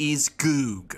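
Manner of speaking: grand, most dramatic, theatrical delivery. Introducing the character's name, a favourite line: most dramatic voice. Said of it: "I always love saying this in my most dramatic voice".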